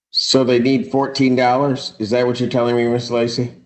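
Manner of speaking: heavy sarcasm, flat and dry.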